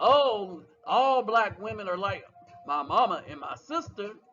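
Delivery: low, mocking put-on dude voice.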